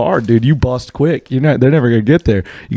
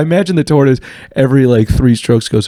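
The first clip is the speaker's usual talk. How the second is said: ordinary talk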